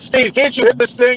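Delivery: high-pitched, loud shout. Retelling a hunt where the cop drove and shot: imitating someone yelling. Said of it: "he's yelling at me".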